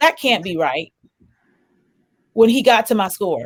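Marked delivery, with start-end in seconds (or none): 0.0-0.9 put-on muttered mumble under the breath. Retelling a counselor's reaction on reaching a test score: imitating a mumble under the breath. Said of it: "This man literally mumbled under his breath".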